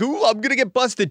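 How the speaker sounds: play-acted very high, easygoing, friendly, congenial voice. Retelling a man's change of attitude: imitating a congenial tone. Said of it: "congenial, like".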